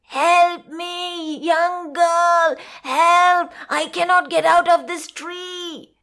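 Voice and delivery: calling out, crying out. Reading a story, a spider stuck in a tree calls to a girl, crying out for help. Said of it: "He cried".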